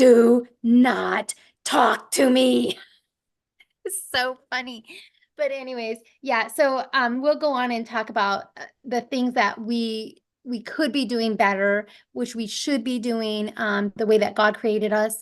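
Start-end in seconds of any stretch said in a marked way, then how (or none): 0.0-2.8 put-on menacing evil voice, loud and very slow. Retelling labor, the speaker recalls answering someone who talked mid-contraction: retelling in an evil voice. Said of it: "in the most evil voice ever".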